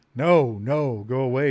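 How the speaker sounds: mangled, garbled, very slow, loud creature voice. Narrating a game scene, voicing a creature that backs away; garbled creature voice. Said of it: "he says in a garbled voice".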